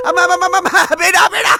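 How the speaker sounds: terrified, high-pitched, stammering screaming in panic.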